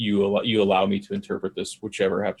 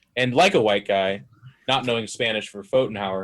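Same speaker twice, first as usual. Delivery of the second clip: normal talking voice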